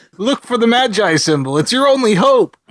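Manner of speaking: high, dramatic, pleading, urgent voice.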